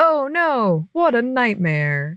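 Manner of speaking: very sarcastic mock dismay, high and swooping. Quoting a character's reply to another character, very sarcastic. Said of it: "very sarcastically".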